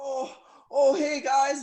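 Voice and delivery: mock very loud, very slow, drawn-out, eager, excited tone. Retelling how John greeted visitors from his hospital bed: imitating John's excited greeting. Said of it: "like all excited".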